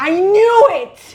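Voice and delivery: shrill outburst, very loud and high-pitched. Hearing that the Parmesan formulation changed, yelling. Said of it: "I didn't mean to yell".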